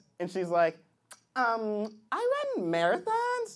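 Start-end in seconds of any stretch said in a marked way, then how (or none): 1.4-3.6 put-on, animated, sing-song girly voice.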